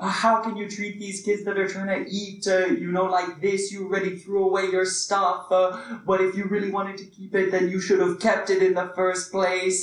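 mock yelling, acted out. Speaker recounts a woman turning on a man in front of kids, retelling her yelling. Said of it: "she started yelling a bunch of curse words and saying".

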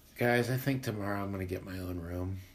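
utterly defeated, resigned voice, low and soft. Retelling what a bunkmate said in complete darkness; mimicking a totally defeated voice. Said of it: "in a totally defeated voice".

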